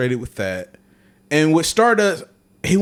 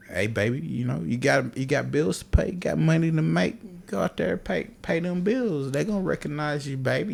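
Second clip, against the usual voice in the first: quieter put-on country drawl; 7 dB quieter than usual. Retelling a wrestling video, imitating Dusty Rhodes talking country. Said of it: "you know how Dusty talk country".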